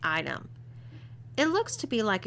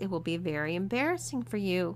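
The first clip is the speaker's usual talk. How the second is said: plain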